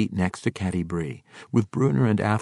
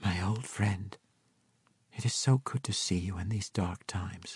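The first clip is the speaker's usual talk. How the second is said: close, soft, hushed half-whisper; 8 dB quieter than usual. Cynophane embraces Drizzt on his arrival, half-whispered. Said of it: "Cynophane whispered".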